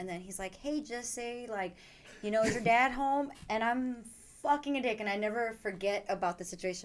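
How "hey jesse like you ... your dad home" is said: put-on rural Ohio country accent, old man voice. Retelling a phone call from a grandfather from Ohio: country accent. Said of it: "they have, like, a country accent".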